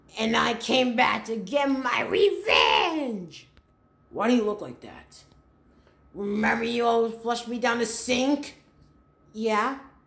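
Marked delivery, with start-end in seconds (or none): 0.2-3.5 drawn out, pitch swooping up and down. Playing a witch returning for revenge: Rainbow Witch voice. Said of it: "The Rainbow Witch".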